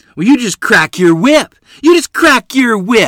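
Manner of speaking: high, very loud, shrill, full-volume hollering. Narrator reading Mother's line in her feud with Ms. Haycock, hollering. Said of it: "Mother hollered".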